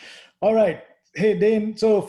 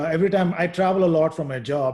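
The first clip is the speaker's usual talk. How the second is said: usual speaking voice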